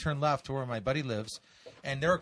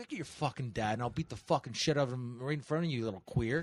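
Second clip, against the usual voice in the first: put-on mean taunting tone, quieter; 2 semitones lower, 4 dB quieter than usual. Retelling telling off a nine-year-old: retelling being extra mean. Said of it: "I have to be extra mean".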